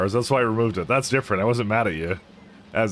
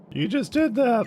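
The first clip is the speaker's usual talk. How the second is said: put-on whiny voice, very high pitched; 13 semitones higher than usual. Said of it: "Making a soy voice for, uh, for Pat".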